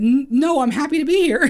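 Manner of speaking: high squeaky voice. Recalling unexpectedly going on the air, retelling in his squeaky voice. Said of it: "in my squeaky voice".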